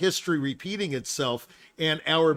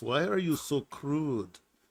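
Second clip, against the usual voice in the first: soft, slow, put-on Belgian or Swiss accent; 5 dB quieter than usual. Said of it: "She was Belgian or Swiss or something, so she said it that way".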